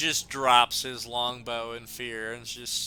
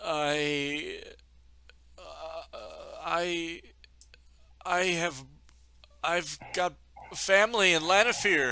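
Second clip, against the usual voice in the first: terrified, frightened voice; 4 semitones higher, 7 dB quieter than usual. Voicing a character threatened by a warrior: terrified, shaking in his boots. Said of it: "he's shaking in his boots".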